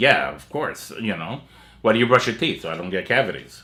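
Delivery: acted coolly logical, matter-of-fact, stating-the-obvious tone. Illustrating how Laurie Strode says it: imitating matter-of-fact Laurie Strode, Spock-like. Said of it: "almost Spock-like".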